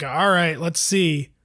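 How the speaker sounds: put-on resigned tone of voice. Recalling sitting down to watch game six: imitating own past resigned tone. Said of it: "in sort of a resigned state".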